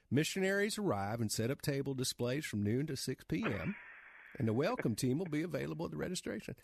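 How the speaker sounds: heavy, deep Southern accent. Voiceover performer demonstrating their audition voice, in a deep Southern accent. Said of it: "I audition for somebody who wants a deep Southern accent, I get that job".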